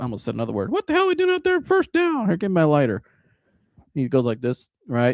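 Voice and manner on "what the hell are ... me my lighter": mock griping, complaining voice, higher. Imagining a chain-smoking coach griping at his players: imitating a griping coach. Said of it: "you imagine him out there bitching about".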